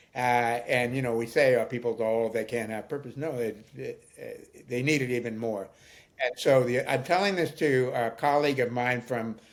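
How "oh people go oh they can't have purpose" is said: ordinary talk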